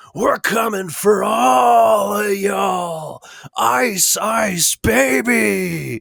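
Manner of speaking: put-on very high, very slow, shrill, drawn-out hollering. Retelling what a man at a protest was yelling: imitating a man yelling. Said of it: "he was yelling".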